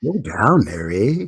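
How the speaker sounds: put-on mock Canadian accent. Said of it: "you're not gonna bust out the accent for us?".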